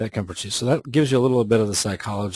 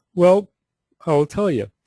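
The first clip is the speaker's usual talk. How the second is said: mid-yawn, raised voice, words pulled out of shape; 9 semitones higher, 6 dB louder than usual. Speaker explaining how you know a lead is a buyer, yawning. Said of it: "Sorry about yawning".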